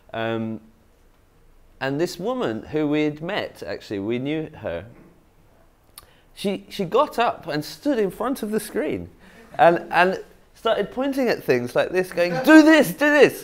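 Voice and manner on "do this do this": shrill, very loud and high-pitched shouting. Recounting a woman who stood before the screen yelling at the audience, retelling her shout. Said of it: "shouting at the audience".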